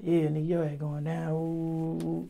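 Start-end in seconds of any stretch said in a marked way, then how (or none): 0.0-1.3 gloating, taunting jeer spoken through laughter. Retelling police laughing at the arrested speaker: imitating police laughing and taunting.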